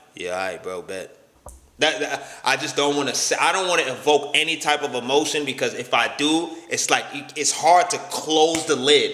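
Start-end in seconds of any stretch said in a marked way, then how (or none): 0.2-1.2 flat, toneless mutter, very low and softer. Speaker shows how he answers people when he gets upset, flat monotone. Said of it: "I'm real monotone because when I get upset".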